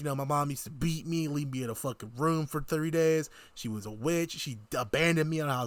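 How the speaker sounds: ordinary talk, nothing marked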